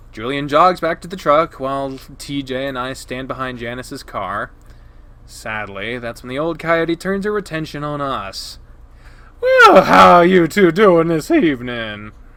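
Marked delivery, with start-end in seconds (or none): 9.4-12.1 loud, obnoxious voice. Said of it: "Such a dumb voice".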